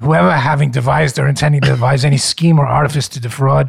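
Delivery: strong, broad, heavy Brooklyn accent. Reading a legal passage aloud for the group in Brooklyn accent. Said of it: "I will read it in my Brooklyn accent".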